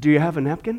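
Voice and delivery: hushed, quiet, very low voice. In a told story, an old man at the car window asks the men inside: quietly asking. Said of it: "he just quietly asks".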